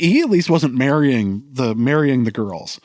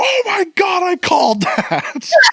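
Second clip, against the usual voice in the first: put-on very high, swooping, shrieked scream. Recounting how she reacted to a later episode, imitating someone screaming. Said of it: "she just screams".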